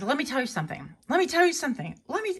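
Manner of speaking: mock panicked pleading. Retelling a meme of a man strapped in a chair: imitating panicked pleading. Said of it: "and you hear the panic".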